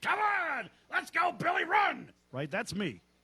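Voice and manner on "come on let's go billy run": acted-out yell, much higher and slower. Picturing himself at the park with no kid playing, mock-yelling at kids. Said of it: "start yelling at the kids".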